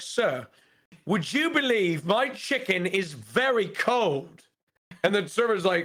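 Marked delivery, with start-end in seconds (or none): 0.0-4.4 put-on British accent, male voice. Retelling a diner complaining about his chicken: put-on british accent. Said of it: "saying that in the British accent".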